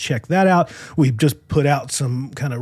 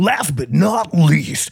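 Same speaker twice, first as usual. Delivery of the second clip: loud announcer-style voice projected to a crowd. Retrying a phrase to sound more coherent, in a WWE announcer voice. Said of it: "Sound like a WWE announcer".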